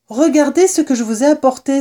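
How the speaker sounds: proudly exclaimed, high-pitched. Sansonnet drops the provisions he carried in his teeth, exclaiming proudly. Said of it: "s'exclama-t-il, tout fier".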